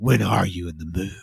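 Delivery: put-on, abruptly irritated, angry changed voice. Retelling a movie scene where a character suddenly gets mad: imitating a suddenly angry voice. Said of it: "his whole demeanor, his whole voice changed".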